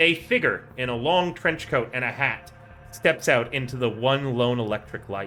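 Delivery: plain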